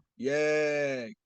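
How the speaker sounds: sarcastically excited, mock cheer. With the team already going 0 and 3, a host cheers with sarcastic fake excitement. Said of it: "the excitement in my voice right now?".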